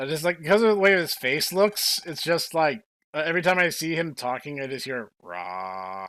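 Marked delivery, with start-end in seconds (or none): 5.2-6.1 dead-flat, low, drawn-out monotone. Describing how a game character sounds: flat monotone voice. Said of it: "the most flat, monotone voice imaginable".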